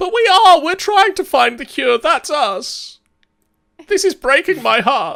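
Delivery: small gnome voice, very high. Narrating a voice carried on the wind in a tabletop game, small gnome voice. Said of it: "the voice of a small gnome saying".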